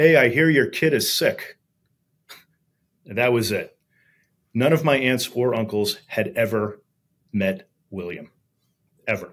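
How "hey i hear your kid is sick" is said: high, carrying, called-out shout. Retelling what Donald shouted from fifteen feet away: imitating Donald shouting. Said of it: "he shouts out".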